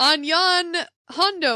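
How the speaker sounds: put-on old-fashioned English phrasing, delivered like an old stage play. During a talk-like-pirates bit, slipping into talking like Shakespeare. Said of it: "now I'm talking like Shakespeare".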